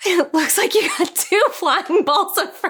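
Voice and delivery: talking through laughter. Telling a joke about a scene, laughing while talking. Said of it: "I'm laughing at my own joke".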